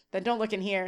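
plain

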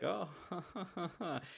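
soft, high, uneasy, awkward laugh. Retelling the group's reaction to a man's odd story, an uncomfortable laugh. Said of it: "Uncomfortably laughed".

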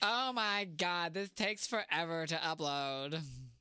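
slow, dragging, stretched-out complaining. Repeating what the other speaker said, imitating Ricky. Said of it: "I was impersonating you".

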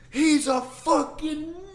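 shrill, piercing, very high, loud scream. Retelling a guy screaming from the other side of the car: retelling a guy's scream. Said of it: "This guy screams".

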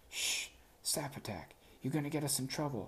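hasty, hushed, urgent, under the breath. A character clamps a hand over a statue doorbell's mouth, shushing. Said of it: "shushing the indignant copper girl doorbell".

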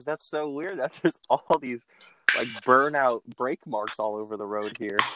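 put-on, dripping-with-sarcasm, super sarcastic tone. Retelling a traffic stop, quoting the officer by imitating his sarcasm. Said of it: "He was like super sarcastic about it".

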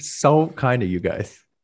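very slow syrupy sarcasm. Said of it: "that was sarcasm".

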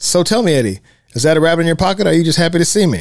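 dry, dead-serious deadpan delivery. Recounting a film scene, quoting Dolores's classic line deadpan. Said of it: "Dolores just straight faces".

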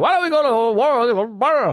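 put-on marble-mouthed old New York accent, "world" drawn out. Retelling what a crazy diner waitress kept saying, in an old New York accent. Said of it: "She's got an old New York accent".

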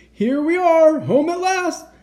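very high, loud, full-voiced shouting. Santa arrives home with his reindeer, shouting loudly. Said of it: "shouted Santa loudly".

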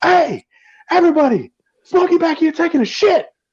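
very high, slow, drawn-out holler. Retelling a movie scene where Ezell yells to everybody: imitating Ezell yelling. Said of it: "goes to the road and yells".

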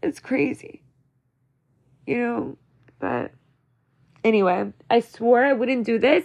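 tearful, weeping speech through tears. Speaker talking to listeners before saying goodnight, crying. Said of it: "And here I am crying again".

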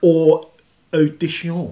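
mock Japanese accent and pronunciation. Pronouncing a film title a second time, in a fake Japanese accent. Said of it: "That was your Japanese accent".

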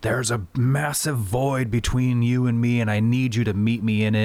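acted furious, angry yelled pleading. Retelling a TV scene where a father yells a prayer: imitating a yelled angry prayer. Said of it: "he just starts yelling".

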